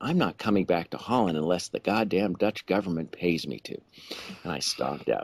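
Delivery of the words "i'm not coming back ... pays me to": imitated muttering under the breath. Retelling a reply to a policeman: imitating muttering under breath. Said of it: "I said under my breath".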